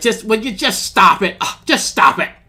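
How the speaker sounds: exasperated fed-up voice. Acting out how he sounds when he speaks, imitating an annoyed tone. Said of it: "He just sounds annoyed".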